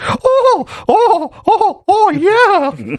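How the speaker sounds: squeaky voice pitched way up high. Speaker retells a scene from a TV episode, in Mickey Mouse voice. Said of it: "it's like Mickey Mouse's voice".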